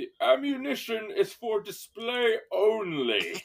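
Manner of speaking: very high, swooping fancy butler voice. Telling a story, the storyteller voices the butler after an empty gun click: fancy butler voice. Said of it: "I love your butler voice".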